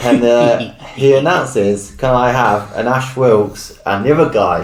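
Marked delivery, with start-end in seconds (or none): none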